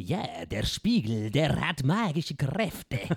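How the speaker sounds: put-on villain voice with Spanish accent. Describing a voice actor's villain who wants to buy a mirror, Spanish villain accent. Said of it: "spanischen Akzent, so einen spanischen Bösewicht, der redet immer so".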